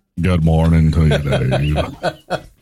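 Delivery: deep, very slow, drawn-out voice. Greeting the host after being introduced as Sam Elliott: Sam Elliott impression. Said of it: "everybody's favorite T V deep voice man, Sam Elliott".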